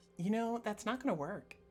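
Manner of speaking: put-on Valley Girl accent and voice. Voicing a voice the party hears but cannot see: Valley Girl accent. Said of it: "Does it say that in the Valley Girl accent?".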